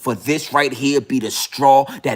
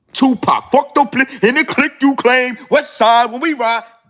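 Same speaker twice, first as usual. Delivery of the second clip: very high-pitched delivery, voice pushed way up; 11 semitones higher, 4 dB louder than usual. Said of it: "Tupac was talking like that".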